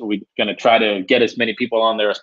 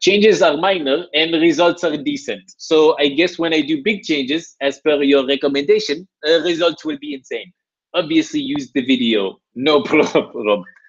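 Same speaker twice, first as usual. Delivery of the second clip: put-on French accent; 4 semitones higher than usual. Reading aloud a client's message the way he would read it: imitating Fabian's French accent. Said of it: "the way he would read it".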